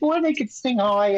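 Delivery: exaggerated put-on New York accent. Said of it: "they talk like this".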